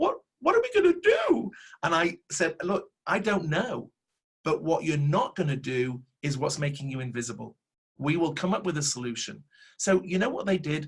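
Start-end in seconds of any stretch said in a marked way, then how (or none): 0.0-1.5 put-on very high, loud, swooping little-kid voice. Retelling what a sales manager asked, imitating a child's voice. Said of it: "in a child's voice".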